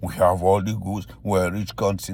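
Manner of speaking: usual speaking voice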